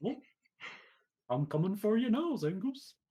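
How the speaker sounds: very high, silly, goofy put-on voice. Recalling facing a Zangoose, the speaker repeats what they said: goofy voice. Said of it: "immediately slipped into a goofy voice".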